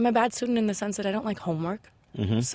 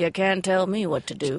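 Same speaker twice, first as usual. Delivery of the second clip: put-on defiant cartoon voice. Asked to do it again, the speaker repeats the line in a Simpsons-character voice. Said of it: "Can you do that again?".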